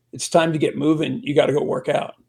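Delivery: ordinary talk, nothing marked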